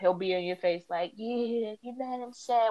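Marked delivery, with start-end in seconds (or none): 1.2-2.7 super slow, dragged-out speech, pitched slightly up. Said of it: "talk to you, like, super slow motion".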